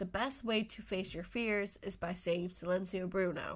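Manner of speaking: ordinary talk, nothing marked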